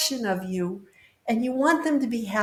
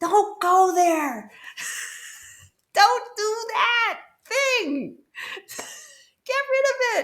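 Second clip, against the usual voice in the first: put-on urgent, high, drawn-out yell; 10 semitones higher than usual. Acting out spirit guides calling from another room, imitating spirit guides yelling. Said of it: "they're yelling as loud as they can".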